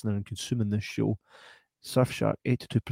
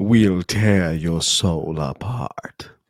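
deep, loud, menacing villain voice; 4 semitones lower, 6 dB louder than usual. Showing off an impression, in a Pinhead impression. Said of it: "This is my Pinhead impression".

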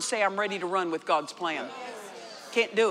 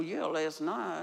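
put-on muttering under the breath, lower and quieter; 4 semitones lower, 7 dB quieter than usual. Retelling a reply to a minister: retelling a mutter under breath. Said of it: "under my breath".

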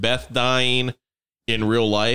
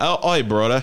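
put-on English accent. Acting out Gary Oldman playing Dog: Gary Oldman English accent. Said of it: "keeps saying "brother" in an English accent".

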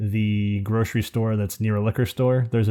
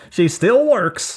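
very high, loud South Jersey twang; 11 semitones higher, 5 dB louder than usual. Retelling a man's reply to him, in a Southern Jersey twang. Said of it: "with his Southern Jersey, Jersey twang".

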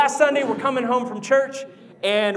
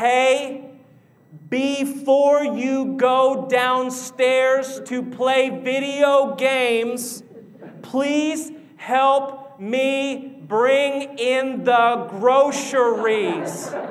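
very slow, deliberate delivery, "me" drawn out. Retelling asking for help bringing in the groceries: very slow speech. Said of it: "I begin to talk really slow".

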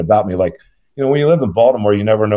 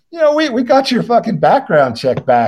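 laughing while talking, higher pitched; 13 semitones higher than usual. Retelling what a lady at a background check said: imitating someone laughing while talking. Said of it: "she's laughing about it".

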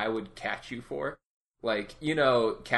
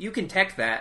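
put-on high, small little-kid voice; 9 semitones higher, 3 dB louder than usual. Retelling hearing a kid nearby while playing Tekken: imitating a little kid's voice. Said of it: "a little kid voice a little ways to the left saying".

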